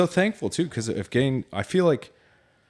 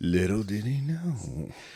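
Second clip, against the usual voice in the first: slow, dramatic TV narrator voice. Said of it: "the Dateline voice".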